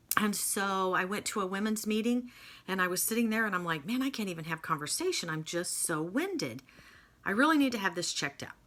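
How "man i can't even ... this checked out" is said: ordinary delivery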